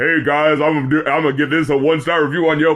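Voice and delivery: put-on deep voice. Describing another creator's rambling bit, doing the Save That Money deep voice. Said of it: "he does the deep voice".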